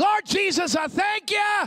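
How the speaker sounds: put-on shouting voice, loud. Retelling a father praying over restaurant food: imitating dad's shouted prayer. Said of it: "associated with the shout".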